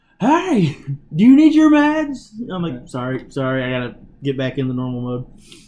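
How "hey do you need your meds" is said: very loud, very high-pitched shout. Recounting still being wound up when the next person comes up, retelling own yelling. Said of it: "still like wound up in the yelling voice".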